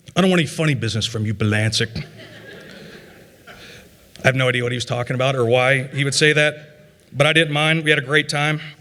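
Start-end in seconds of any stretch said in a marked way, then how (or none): 0.1-2.0 put-on thick New England accent, lower pitch. Speaker recalling a man who roomed with them at a national meet: imitating a thick New England accent. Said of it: "he had this like very thick New England accent".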